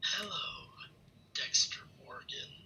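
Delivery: mock threatening, menacing, sinister villain voice. Retelling a villain who finally learns dexter's identity: imitating a menacing voice. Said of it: "he's just got this menacing voice".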